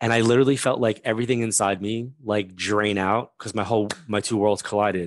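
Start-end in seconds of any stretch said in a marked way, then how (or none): none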